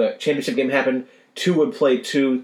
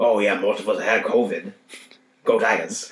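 put-on speaking with a Cajun accent; 4 semitones lower than usual. Imitating a college football coach: Coach O Cajun accent. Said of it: "Coach O in his Cajun accent".

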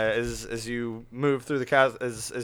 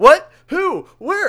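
very high, very loud bewildered, baffled cries; 13 dB louder than usual. Voicing two guards lost in magical darkness: confused guards caught in darkness. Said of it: "caught up in the darkness are like".

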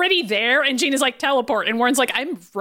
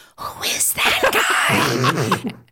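very slow, hushed whisper; 7 semitones lower than usual. Retelling a movie scene, acting out Magneto: imitating Magneto whispering. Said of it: "pointing out and whispering".

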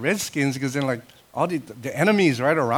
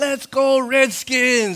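put-on high cheering, rallying yell; 9 semitones higher, 4 dB louder than usual. Retelling what a woman shouted when she came in, imitating her yelling. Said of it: "And she's yelling".

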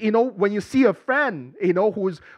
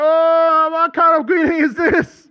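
mock panic, louder and slower; 7 semitones higher, 5 dB louder than usual. Retelling the angel's greeting and voicing Mary's reaction, acting out Mary freaking out. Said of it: "she was freaking out".

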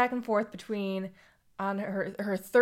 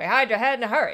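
put-on louder, old-timey 1930s-style voice; 4 dB louder than usual. Repeating a man's advertising tagline the way the other speaker said it, in a 1930s voice. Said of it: "It's kind of like that 30s voice".

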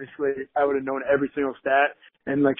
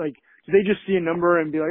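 plain

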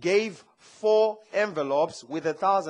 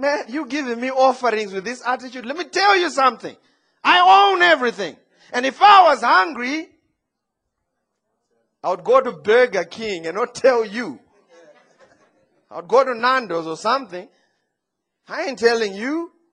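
play-acted annoyed scolding tone, very loud and pitched up; 6 semitones higher, 9 dB louder than usual. Acting out God rebuking offerings given with attitude: imitating an annoyed God. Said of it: "God was ticked off".

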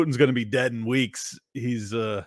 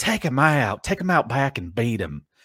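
put-on Southern belle accent. Mock what a man said about Putin, doing Lindsey Graham as a Southern belle. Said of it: "do a Southern Belle impersonation when I do Lindsey Graham".

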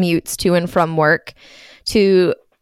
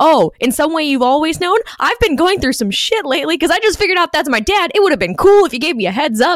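put-on high ranting outburst, yelled out; 8 semitones higher than usual. Retelling a podcast host's funny rant about a scene: imitating someone's yelling rant. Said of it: "the most delightful rant yelling about".

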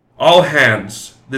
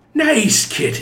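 very high, condescending, patronizing tone; 14 semitones higher than usual. Narrator reads a man who has just entered, addressing a cat, patronizing. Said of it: "the man said in a patronizing tone".

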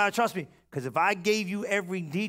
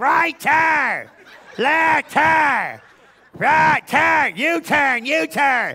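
put-on grouchy old lady voice, louder, slower; 7 semitones higher, 11 dB louder than usual. Speaker compares own navigation voice with the wife's; imitating a grouchy old lady. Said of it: "I got some grouchy old lady".

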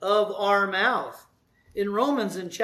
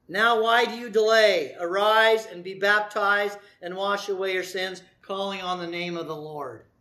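usual speaking voice

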